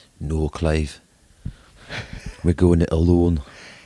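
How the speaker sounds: lilting put-on Scottish accent. Speaker replying in character to a co-host's request; gentle Scottish accent. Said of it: "He's Scottish, not Geordie".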